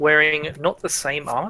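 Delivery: ordinary delivery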